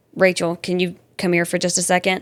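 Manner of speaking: grave, dead-serious voice. Retelling how Daddy called Rachel over: imitating a really serious tone. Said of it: "really serious tone and go".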